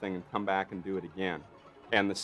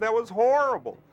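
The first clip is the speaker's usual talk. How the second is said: raised, high-pitched called-out voice; 9 dB louder than usual. Retelling a filmed effect going wrong, imitating John. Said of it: "You know, like that".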